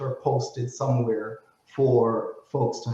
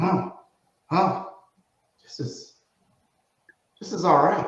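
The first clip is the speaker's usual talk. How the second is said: put-on German accent, pitched up, musing tone; 5 semitones higher than usual. Retelling what dad said while driving the Tesla: imitating dad's German accent. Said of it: "He has a German accent".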